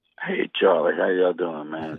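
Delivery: hoarse, rough voice, nearly gone. A caller greeting the host on a call-in show, hoarse voice. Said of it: "losing your voice a little bit?".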